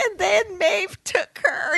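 high, slow bawling cry.

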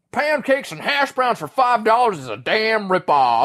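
put-on gummy, toothless old-timer voice. Retelling what an old man with no teeth said, reading the menu: imitating a toothless old man. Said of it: "this old dude with no teeth".

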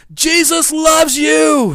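very high-pitched, shrill, loud yell. Retelling yelling out a car window at another driver: retelling a yell. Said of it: "And so I yell out the window".

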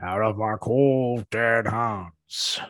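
very slow delivery, every word drawn out. Repeating the famous line in a Charlton Heston impression. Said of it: "That's my Charlton Heston".

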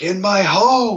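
menacing gangster yell. Retelling quoting The Godfather to a cat: threatening Michael Corleone yelling. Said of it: "Michael Corleone was yelling".

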